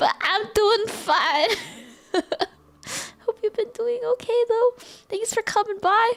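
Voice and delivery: very high, choked-up, sniffly, teary voice. Pausing a sad story to reassure a visitor, sniffly from crying. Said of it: "Just sniffly".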